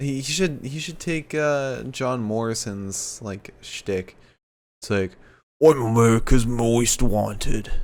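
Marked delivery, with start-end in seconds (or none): 5.6-7.7 slipped Australian accent, louder. Suggesting a line another man could say: near-Australian accent. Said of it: "How did it almost become Australian?".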